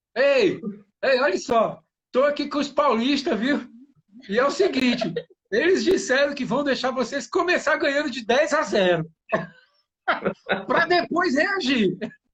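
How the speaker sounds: high, loud, outward-projected shout. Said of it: "ele sai gritando pros, pros sertanejos".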